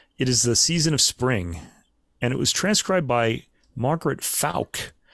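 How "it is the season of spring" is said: normal talking voice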